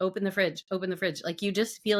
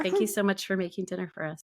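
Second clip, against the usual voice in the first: mock passive-aggressive child voice. Retelling the kids' coded thanks for dinner: imitating passive-aggressive kids. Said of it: "mine were just pass ag".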